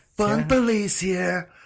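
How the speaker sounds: acted yelling. Retelling own past yelling at police: imitating own past yell. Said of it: "you just started yelling at them".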